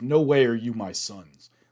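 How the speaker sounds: put-on disgusted voice. Retelling a scene where Mister Pandit disowns his sons: imitating Mister Pandit's disgust. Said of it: "You could feel his disgust".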